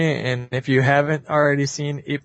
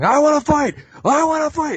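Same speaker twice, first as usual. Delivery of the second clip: put-on very high, furious, frantic, ballistic shouting; 13 semitones higher, 3 dB louder than usual. Retelling a movie scene where the mild hero goes ballistic: imitating a furious frantic shout. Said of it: "starts going fucking ballistic, shaking on the cage".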